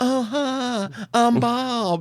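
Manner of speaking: put-on very high-pitched, effeminate Southern accent. Retelling meeting the actor who played Bob, imitating his effeminate Southern voice. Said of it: "he's got this real effeminate Southern voice".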